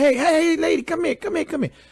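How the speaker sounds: high-pitched calling out. Retelling how a woman in a bathroom called people in from outside, imitating a call for help. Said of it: "she calls in help from outside".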